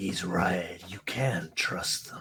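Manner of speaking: whispering voice. Voicing a voice heard whispering in a character's mind: whispering voice. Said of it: "a voice just kind of whispering to you".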